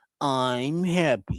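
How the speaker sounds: bad, low cartoon-character voice. Quoting a cartoon character's signature line: bad Droopy impression. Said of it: "I suck at doing the Droopy impression".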